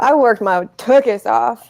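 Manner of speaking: slow delivery spoken through laughter. Answering a question about getting into Carlson, laughing.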